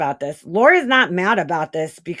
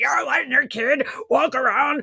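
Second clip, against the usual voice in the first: put-on angry, frantic woman's voice, higher pitch; 6 semitones higher than usual. Retelling what a mad woman wrote: imitating Laura being mad. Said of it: "She's so mad about this".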